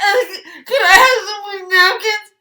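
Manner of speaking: high, loud sobbing mixed with laughing.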